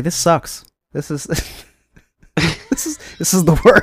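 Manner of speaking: very slow, drawn-out, laughing through the words. Joking about arriving and hating it: laughing while talking. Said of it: "Can't even say that with a straight face".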